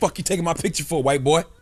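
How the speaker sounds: mock angry woman's voice, heated and confrontational in tone. Acting out a woman confronting a man taking her picture: imitating an angry woman.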